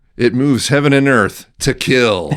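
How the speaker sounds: epic, dramatic movie trailer announcer voice. Pitching his own better tagline for Killdozer, in a movie trailer voice-guy voice. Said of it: "the voice guy".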